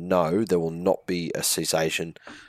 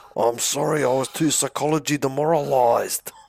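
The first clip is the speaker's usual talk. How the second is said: put-on drunk Greek accent, much higher pitch; 8 semitones higher, 4 dB louder than usual. Acting out a demoralised player explaining why they lost, in a drunk Greek accent. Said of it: "It was like a drunk Greek guy".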